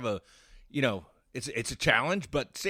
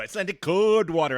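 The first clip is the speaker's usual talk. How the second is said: mock Icelandic accent, put-on; 4 semitones higher, 6 dB louder than usual. Repeating a product name the way they said it: put-on Icelandic accent. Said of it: "so I said it with the accent too".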